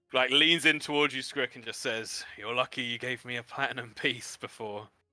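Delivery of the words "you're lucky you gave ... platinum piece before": huffy, eye-rolling exasperated huff, quieter. Voicing a character who rolls her eyes and leans in: huffy, eye-rolling annoyance. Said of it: "rolls her eyes and huffs and says".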